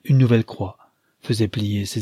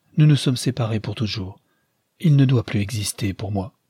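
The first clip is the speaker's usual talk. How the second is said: plain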